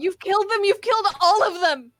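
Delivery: very loud, very high shrieking scream. Voicing a character screaming at the party over the fallen: screaming. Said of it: "Just screaming".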